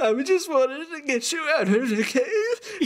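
tearful sobbing, voice cracking and giving out. A character speaks to a companion who bumped their head: crying, voice breaking. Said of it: "voice is dying as he's crying".

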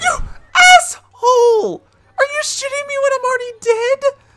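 very high, very loud, shrill shout, voice breaking. Streamer is killed again in a game and yells, voice cracking. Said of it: "Did my voice crack again?".

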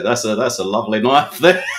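put-on loud, broad-sounding Australian accent. Quoting a line from a film about a knife: australian accent. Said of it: "what an Australian would say".

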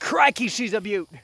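very high-pitched put-on Australian accent. Narrating dragging an alligator back to the truck, best Aussie voice. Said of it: "in my best Aussie voice".

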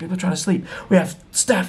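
held-back, angry, scolding screaming outburst. Retelling how the hotel owner screamed at him: imitating the hotel owner screaming. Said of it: "she just screamed at him".

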